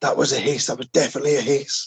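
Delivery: mock frightened, insistent, panicked outcry. Retelling a first investigation, finally reaching a man who is screaming, retelling his screaming. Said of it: "he's just screaming".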